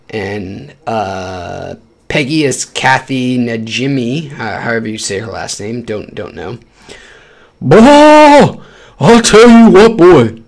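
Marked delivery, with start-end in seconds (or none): 7.6-10.3 animated cartoon voice, "bah" long, drawn, belted. Discussing the show's voice actors, then allowing himself one King of the Hill impression. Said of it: "at least one King of the Hill impression".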